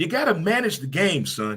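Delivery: swooping, animated coach voice with swinging pitch. Talking about managing the game, the speaker slips into a Herm Edwards voice. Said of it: "In my Herm Edwards voice".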